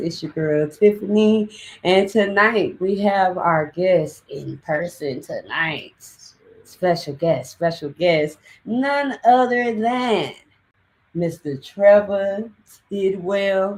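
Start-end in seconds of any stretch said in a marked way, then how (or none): 8.6-13.8 country accent, pitched up. A podcast host introducing the in-person guest: sounding country. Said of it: "I sounded country when I said that".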